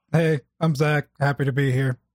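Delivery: fake flat, unenthusiastic deadpan delivery. Introducing himself when joined on the show: mock unenthusiastic greeting. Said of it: "You can tell in his voice how happy he is to be here".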